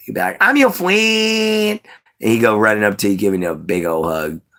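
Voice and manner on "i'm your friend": very high, earnest, eager friendly voice. Explaining a voice, imitating how a childhood best friend said it. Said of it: "That's how he would say it".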